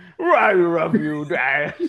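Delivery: cartoon dog voice with barks. Retelling how a restless kid tells his dad he loves him, barking Scooby-Doo voice. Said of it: "it's like a bark".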